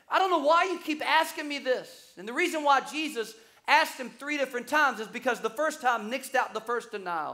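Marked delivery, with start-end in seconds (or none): 0.1-2.1 exasperated, fed-up, frustrated, pitched-up voice. Retelling a story, the speaker acts out a man's reply to a third question, mock-frustrated.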